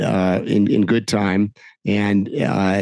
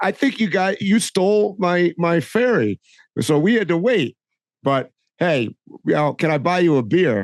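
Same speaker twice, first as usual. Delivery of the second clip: put-on British accent, pitched up high; 9 semitones higher than usual. Retelling a man's words after he put a hand on the speaker's shoulder, in Michael Palin's British accent. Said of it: "with a British accent".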